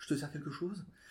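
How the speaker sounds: acted super gentle voice. Retelling how a burly bartender leaned over to offer a drink, imitating a super gentle voice. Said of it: "avec une voix hyper gentille".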